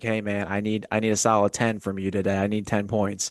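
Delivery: ordinary delivery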